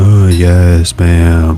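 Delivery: droning, obedient tone. Voices inside answer a woman giving brusque orders; droning obedient voices. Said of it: "you hear droning voices saying".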